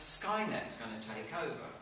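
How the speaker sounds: ordinary talk, nothing marked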